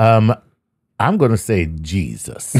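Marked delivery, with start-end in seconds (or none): 1.0-2.6 very strong, slow Southern drawl. Answering where the energy for being alive comes from: Southern Baptist delivery. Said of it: "That's the way you said that. That's very Southern Baptist".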